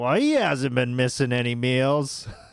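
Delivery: put-on Boston accent on every word. Retelling a remark from a guy at security, imitating a Boston accent. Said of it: "some guy with a Boston accent".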